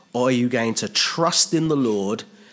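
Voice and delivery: ordinary delivery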